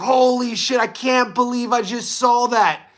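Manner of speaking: slow, drawn-out, half-shouted mild yell. Retelling watching a last-seconds knockout on TV: retelling screaming at the TV. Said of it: "I'm screaming at the T V".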